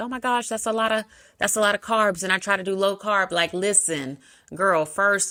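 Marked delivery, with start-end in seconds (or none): 0.0-3.3 put-on flustered, fast, panicked fretting. Imitating a listener worried about eating carbs: imitating someone freaking out. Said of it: "somebody is probably freaking out because she's like".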